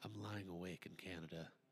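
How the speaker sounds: very soft, quiet, sentimental, emotional voice. Doing a mocking impression of Ryan over emotional piano music: imitating Ryan. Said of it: "I'm gonna do an impression of Ryan".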